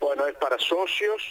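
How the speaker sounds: ordinary talk, nothing marked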